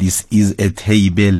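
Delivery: English with a Persian accent.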